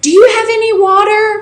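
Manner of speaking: high, acted-out yell, very high pitched. Retelling a woman in a nearby cell calling over, retelling a yell across the way. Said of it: "Coral yells across the way".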